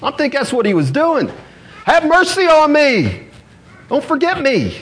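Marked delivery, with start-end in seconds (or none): 1.8-4.8 high, swooping, desperate pleading cry. Retelling a man calling to Jesus as he passes, retelling a desperate cry. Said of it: "He's crying out".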